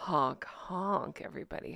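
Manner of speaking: sultry, breathy, seductive whisper. Signing off to everybody, repeating the goodbye seductively. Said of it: "Should I do it seductively too?".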